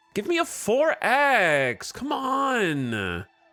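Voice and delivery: very high shrill sing-song whine, "on" stressed and drawn out. A streamer mimicking annoying people to chat, mock-whiny, stressing last syllable. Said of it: "stress the the last syllable".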